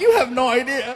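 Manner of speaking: mock crying voice. Retelling answering a drive-through speaker, mock crying. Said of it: "I'm crying".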